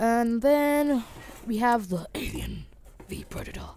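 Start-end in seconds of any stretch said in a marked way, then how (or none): 1.9-3.7 spooky, menacing, swooping scary movie voice. Showing items to viewers, announcing the next one in a scary voice. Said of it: "Hope that was a scary voice".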